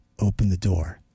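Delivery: very low, eerie, creepy, calm voice. Retelling a stranger at the door at 4 a.m., imitating a creepy calm voice. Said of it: "Like in a creepy kind of voice like that".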